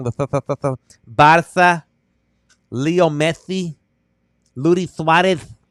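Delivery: imitated Spanish accent, rolled tongue. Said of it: "they speak like this with the accent like this".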